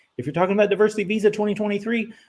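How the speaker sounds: rushed, fast, rattled-off talk. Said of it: "I'm talking too fast, probably".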